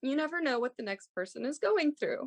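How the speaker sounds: choked-up voice. Recalling a mother's words about childhood cancer, choked up. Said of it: "I'm gonna get choked up throughout this".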